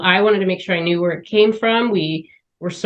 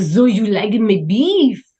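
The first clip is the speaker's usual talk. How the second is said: put-on slow, strong French accent; 3 semitones higher than usual. Imitating a French-raised restaurant owner asking a diner a question, in a strong French accent. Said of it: "he's got this strong French accent".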